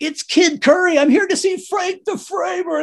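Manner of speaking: very high-pitched, shrill yelling shout. Falling out of the car as armed guys approach, retelling a yell. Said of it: "and I'm yelling".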